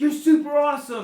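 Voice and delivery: very loud, high, cheering voice.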